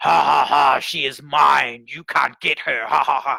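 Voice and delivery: deep, slow demonic taunting. Retelling a worship leader's manifestation: imitating a deeper demon voice. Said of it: "this other voice would speak, and it was deeper".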